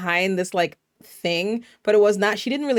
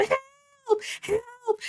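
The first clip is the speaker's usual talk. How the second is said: mock scream, much higher. Retelling a scene from a show, acting out what a woman screamed at someone who could not hear her, imitating screaming. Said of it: "I'm sitting here screaming at the TV".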